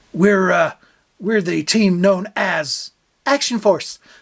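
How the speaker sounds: put-on American accent. Recalling a badly dubbed show on video cassette, in an american accent. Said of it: "I'll just do an American accent".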